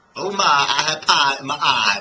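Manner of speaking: very loud, very slow Southern drawl. Discussing regional dialects with another speaker, demonstrating a southern accent. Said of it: "where was the Southern that I just did".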